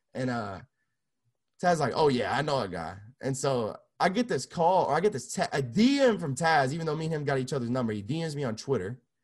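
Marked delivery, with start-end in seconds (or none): none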